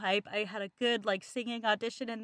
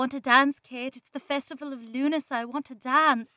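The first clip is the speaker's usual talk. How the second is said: put-on stage Irish accent, raised; 3 semitones higher, 5 dB louder than usual. Performing a line from a college play: Irish accent. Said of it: "I can sometimes do an Irish accent".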